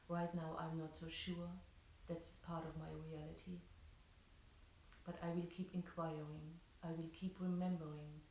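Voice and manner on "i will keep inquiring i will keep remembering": normal talking voice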